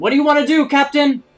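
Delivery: shrill, very loud, high-pitched yell. The first mate calls down to the captain from the crow's nest; shouting. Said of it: "is shouting".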